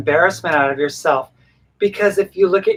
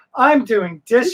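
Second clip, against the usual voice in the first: high, mocking put-on vlogger voice; 6 semitones higher than usual. Mocking a person who copied another's video: imitating a vlogger mockingly. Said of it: "And they're like".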